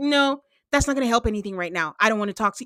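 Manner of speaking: put-on cold, dismissive tone. Retelling a husband shutting down his wife on TV: imitating a cold reply. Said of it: "It was so cold".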